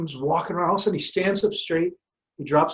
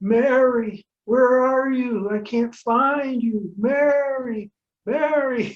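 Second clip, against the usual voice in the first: frail, feeble, pitched-up call near crying, drawn-out word; 9 semitones higher, 3 dB louder than usual. Retelling a man's voice the speaker suddenly overheard, imitating a feeble man. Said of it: "a fairly feeble man saying".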